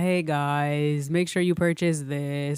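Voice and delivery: very low, slow, flat monotone drone. Speaker addresses the listeners directly, in a monotone. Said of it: "And I'm so monotone".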